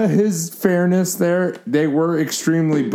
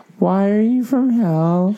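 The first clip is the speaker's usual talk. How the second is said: put-on childlike little-girl voice; 3 semitones higher than usual. Asking a question like a little girl, as another speaker asked: little girl voice. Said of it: "Ask any question like you're a little girl".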